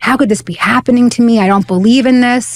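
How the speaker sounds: put-on anguished outcry. Retelling being suddenly healed and thrown to the ground: retelling crying out. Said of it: "I'm crying out".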